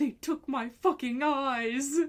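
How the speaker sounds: bad, high, very slow, drawn-out cartoon voice. Quoting a meme, doing the voice while saying she is bad at voices: imitating Winnie the Pooh. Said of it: "I can't do the voice".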